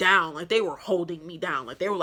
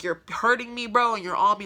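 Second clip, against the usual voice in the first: acted, angry, upset screaming; 4 semitones higher than usual. Retelling being restrained by a man, acting out her angry protest. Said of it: "and I'm getting more mad".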